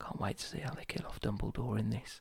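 very quiet, breathy, hushed stage whisper. Retelling a whispered spoiler in a silent cinema: retelling a whisper. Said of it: "I'll whisper to him. I go".

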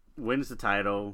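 plain

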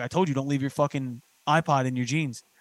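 normal talking voice

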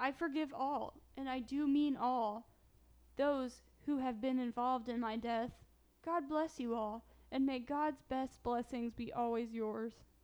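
normal talking voice

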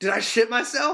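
high, breathless, winded gasping, struggling for air. Retelling a player's words after a hard hit: imitating someone out of breath. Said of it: "trying to catch his breath".

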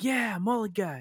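high, mock sarcastic, half-teasing tone. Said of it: "sarcastic praises".

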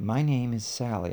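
softened, soft-toned character voice. Reading a dialogue aloud, the speaker gives the character Sally a softer tone. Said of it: "I will use like a softer tone".

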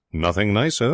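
ordinary talk

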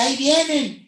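mock girl's screaming shout. Retelling a girl with a camera at a concert: imitating a girl screaming. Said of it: "empieza a gritar y dice".

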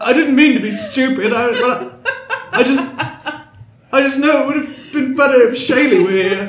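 tearful crying voice. Acting out a scene and trying to sound convincing, in a tearful voice. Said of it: "I'm trying to get the emotion in my voice now".

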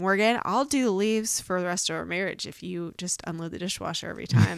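mock playful, quick, light joking tone. Quoting what a spouse once offered about chores, quoting a joking remark. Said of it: "you said jokingly".

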